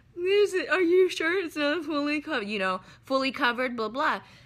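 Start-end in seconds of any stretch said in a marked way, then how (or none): 0.2-2.5 put-on crying through tears, much higher, slower. Retelling her question to the woman who handed her the ticket, retelling crying through tears. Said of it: "I'm crying too hard to even be mean".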